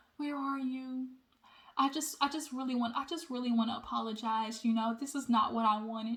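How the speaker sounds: very quiet, gentle, hushed voice. Retelling a woman calling Kevin up, in a soft voice. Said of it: "hit Kevin with the with the soft voice".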